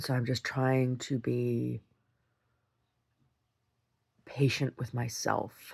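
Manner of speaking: angry and tearful. Speaking to viewers while holding back angry tears: angry and tearful. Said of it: "that's an angry tear".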